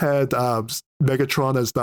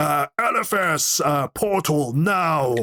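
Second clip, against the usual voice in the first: very slow, with every word drawn out; 3 semitones higher than usual. Retelling a game scene, quoting a character: imitating Aragaz. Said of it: "when Aragaz was like".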